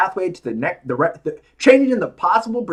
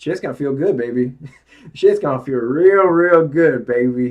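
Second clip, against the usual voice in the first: campy British spy voice, lower; 3 semitones lower than usual. Speaker motivating listeners drops into his Austin Powers voice. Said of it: "that's my Austin Powers voice".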